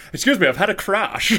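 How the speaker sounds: put-on high, posh, lofty old gentleman voice. Imitating Troy Hawke after a car crash: Troy Hawke voice. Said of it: "this old posh guy with a smoking jacket".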